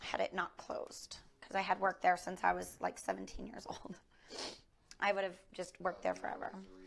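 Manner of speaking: soft, teary, choked-up voice near a whisper.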